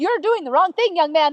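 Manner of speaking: put-on, super sarcastic, stern scolding tone. Retelling scolding a son who laughs at it: imitating own super sarcastic scolding. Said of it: "I'm being super sarcastic".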